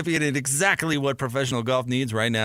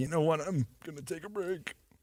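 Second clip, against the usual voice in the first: put-on, very quiet, barely audible tearful crying voice; 2 semitones higher, 9 dB quieter than usual. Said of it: "through his tears".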